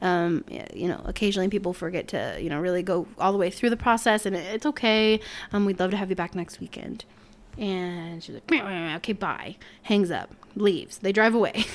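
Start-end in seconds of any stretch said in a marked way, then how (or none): 8.5-9.6 put-on irritated, annoyed, pissed-off voice. Retelling a customer's curt reply on the phone: imitating a pissed-off customer. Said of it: "pissed off".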